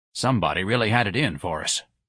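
usual speaking voice

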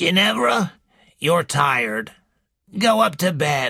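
put-on wheezy, slow delivery. Narrator reading Mrs. Boynton addressing her youngest daughter, Mrs. Boynton's slow wheezing voice. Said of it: "in a slow, wheezing voice".

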